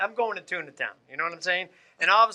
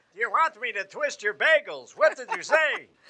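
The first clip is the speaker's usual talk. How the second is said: put-on elderly shopkeeper character voice; 4 semitones higher than usual. Demonstrating the voice his partner asks him to speak in: old man deli owner voice. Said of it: "Speak like an old man who runs a deli".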